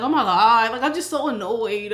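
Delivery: put-on frustrated, complaining voice. Retelling the fiance's reaction to his job news: imitating him sounding frustrated. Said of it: "but he was just frustrated".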